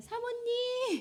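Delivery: high, slow, sugary-sweet voice.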